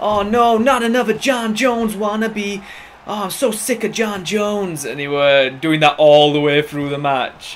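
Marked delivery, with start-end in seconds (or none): 0.0-4.8 high, screaming, jeering taunt. Quoting an opponent who screamed at him during a match, retelling a scream. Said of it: "He's screaming at me".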